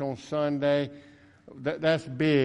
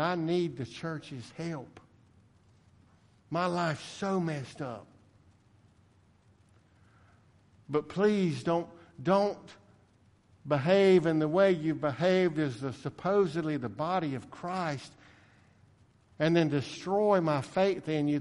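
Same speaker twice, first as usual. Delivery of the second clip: put-on, mock pleading and begging. Quoting a hurting man who asked the church for help, retelling someone begging. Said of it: "He was begging".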